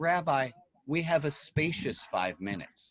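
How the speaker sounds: put-on serene, even-keeled, very calm and soft voice. Retelling a staff member's reply at a workshop: imitating someone speaking very calmly. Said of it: "this woman very calmly said".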